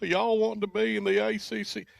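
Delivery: very high, scratchy, creaky jeering voice. Talking about rival Wolfpack fans laughing; impression of an NC State fan. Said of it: "Do your do your impression of an N C State fan again".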